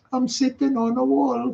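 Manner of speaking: put-on Borough accent. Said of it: "I'm not even gonna attempt it".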